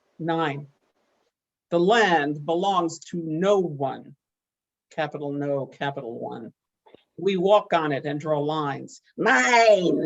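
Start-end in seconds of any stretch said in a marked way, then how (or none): 9.2-10.1 put-on high, loud toddler voice. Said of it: "we say in that toddler voice".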